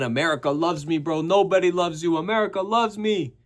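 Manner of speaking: light, high-pitched boastful half-yell. Retelling a pre-fight confrontation: imitating Hamzat yelling. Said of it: "Hamzat's yelling".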